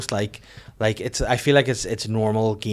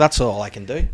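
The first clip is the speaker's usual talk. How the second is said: usual speaking voice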